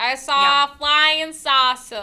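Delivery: put-on loud, very slow New York accent. Imitating a Southern farmer's sighting but sounding New York: unintended New York accent. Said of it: "Why did they sound New Yorkian to me?".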